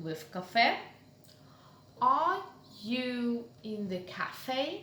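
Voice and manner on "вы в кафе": pitch lifts up at the end of "кафе". Russian lesson on general questions: rising question intonation on кафе. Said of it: "General question, rising intonation".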